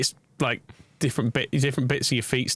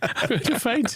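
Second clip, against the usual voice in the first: mock-swooning, fainting victorian lady voice, much higher; 11 semitones higher than usual. Describing feeling unwell, the speaker acts out a swooning victorian lady. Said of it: "a Victorian lady fanning himself going".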